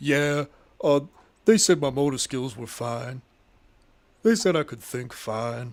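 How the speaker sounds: mock glum, unhappy, joyless tone. Imitating Earl describing his test results: imitating Earl's unhappy tone. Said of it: "He sounds like he got bad news".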